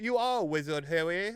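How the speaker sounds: clumsy fake British accent, very high and loud. Talking with others about British shows, showing a bad fake British accent. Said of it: "just are not good at British accents".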